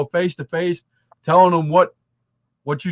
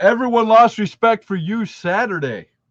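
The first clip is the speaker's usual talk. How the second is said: usual speaking voice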